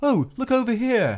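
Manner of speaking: high, drawn-out, generic chummy British voice. Describing a trend among new voice actors: imitating a generic chummy british voice. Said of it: "just a generic British-sounding voice".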